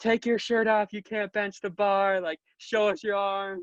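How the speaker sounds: mock, high, mild ribbing heckling jeer. Retelling what an older fan shouted from the stands: imitating someone yelling. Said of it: "yelling at me, like".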